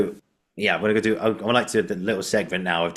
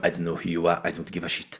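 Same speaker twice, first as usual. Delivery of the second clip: put-on French accent, quieter; 4 dB quieter than usual. Mocking a typical French person snubbing a British tourist: mock French accent. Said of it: "if someone asked me to do a French accent".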